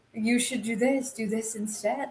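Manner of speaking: tiny, evil little voice. Imitating a tiny voice whispering advice in someone's ear: evil little Jafar voice. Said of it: "Jafar voice in the ear of".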